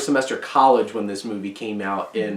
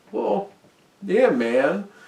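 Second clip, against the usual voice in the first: gruff, casual drawl, a touch higher; 9 semitones higher than usual. Describing the actor's other kinds of characters in a Jeff Bridges voice. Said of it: "He's like".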